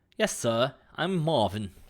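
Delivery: put-on friendly, polite British accent. Playing the Mister Handy robot Marvin, answering the host: Mister Handy British accent. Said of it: "From that lovely accent".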